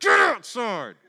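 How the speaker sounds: high, loud, barked-out yell.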